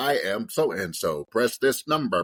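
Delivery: slow, robotic automated-system voice. Explaining scam calls, the speaker imitates the old robot voice. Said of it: "you used to hear the the robot voice like".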